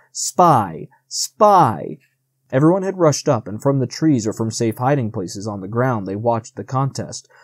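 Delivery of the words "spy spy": swooping, cawing crow-like cry. Narrator reading a story, voicing the crows crying out: cawing crow voice. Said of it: "the crows cawed".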